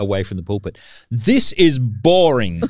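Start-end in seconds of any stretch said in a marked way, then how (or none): 1.1-2.6 mock top-of-the-lungs outburst, high and loud. A parent retells their son standing on a church pew: retelling a shout. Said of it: "at the top of his voice".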